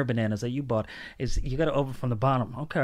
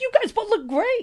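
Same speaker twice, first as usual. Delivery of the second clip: very high-pitched, loud voice, way up; 5 dB louder than usual. Retelling what another speaker just said, imitating a high-pitched voice. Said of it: "Your voice went up four octaves".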